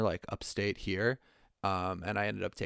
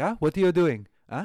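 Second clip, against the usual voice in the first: put-on angry French chef yelling, higher and louder; 8 semitones higher, 9 dB louder than usual. Retelling a kitchen bit, yelling at the other employees: put-on angry French chef yelling. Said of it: "pretend to be a French person, just, like, an angry French chef".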